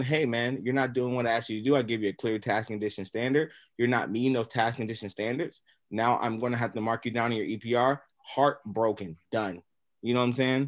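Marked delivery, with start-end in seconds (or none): none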